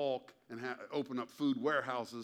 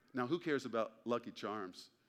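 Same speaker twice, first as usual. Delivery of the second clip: ordinary delivery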